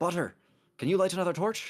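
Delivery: shouting. In a role-play game, a character stalls after hearing someone fall, yelling. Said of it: "he like stalls for a second and yells".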